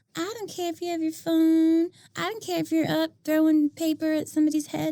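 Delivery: meek, timid voice. Describing a loose approach to students with phones: mock-timid, eager-to-please teacher. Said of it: "that was my like timid teacher voice".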